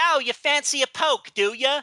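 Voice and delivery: put-on thick old Cockney accent, drawn out. Retelling how the characters in a show talk: imitating thick 1860s London accent. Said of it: "They'll be like".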